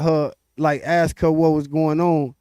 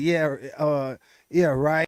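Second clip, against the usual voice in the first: dismissive, condescending tone; 5 dB quieter than usual. Retelling how a lady answered an explanation of Juneteenth: imitating a condescending tone. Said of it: "Like a condescending".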